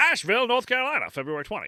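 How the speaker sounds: put-on old-time radio newscaster voice. Reading out a news story's dateline in an old-time radio newscaster voice. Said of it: "I'm gonna do the old timey radio news voice".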